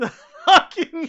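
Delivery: high, loud laughing burst mid-word.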